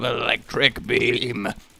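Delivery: "electric beam" said with strong stress. Describing a weapon firing in a game: emphasized "electric beam". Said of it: "You really emphasize that".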